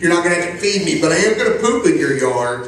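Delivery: plain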